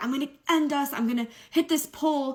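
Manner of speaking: high scream and sobbing at the same time. Retelling the driver's threat while speeding: imitating someone screaming and sobbing. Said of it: "screaming, sobbing".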